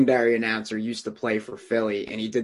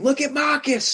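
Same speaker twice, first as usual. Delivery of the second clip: very high, frenzied, wildly excited announcer call; 3 dB louder than usual. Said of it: "go nuts".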